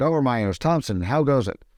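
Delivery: ordinary delivery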